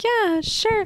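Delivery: very high, airy, breezy mock-agreeable tone.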